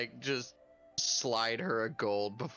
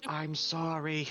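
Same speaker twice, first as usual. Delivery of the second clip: hushed, whispering voice; 3 semitones higher than usual. Apologizing in character to a scared girl: whispering. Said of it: "Is he really whispering that to her?".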